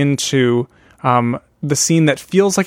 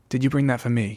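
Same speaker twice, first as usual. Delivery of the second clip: put-on British character voice, quieter; 6 dB quieter than usual. Retelling a scene where Derek speaks to a woman: Derek impression. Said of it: "That's pretty good".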